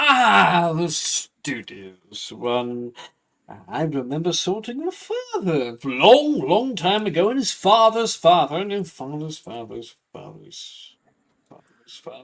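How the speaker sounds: booming voice, drawing out the ah. Voicing the Sorting Hat as it greets a student: Sorting Hat voice. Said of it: "my one time of year I get to do this".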